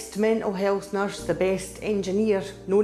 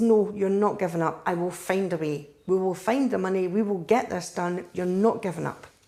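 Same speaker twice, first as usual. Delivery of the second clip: put-on bossy, firm, domineering, insistent tone. Retelling what was said to a child about not giving up: retelling tyrant-like insistence. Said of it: "I sound like a tyrant saying that".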